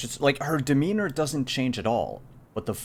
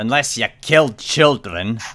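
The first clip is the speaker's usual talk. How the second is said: big put-on dwarf voice, louder; 8 dB louder than usual. Retelling what a woman said in character: big dwarven voice. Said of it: "with that big uh, dwarven voice says".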